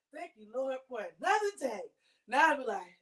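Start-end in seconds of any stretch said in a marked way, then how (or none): 0.1-1.8 cheerful, bright, happy, grateful tone. Retelling how mornings used to start: imitating own past happy voice. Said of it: "I used to wake up happy".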